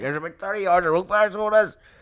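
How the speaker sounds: put-on Northern Irish Belfast accent. Retelling what a seller said, in a Belfast accent. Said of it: "I can't not do that accent".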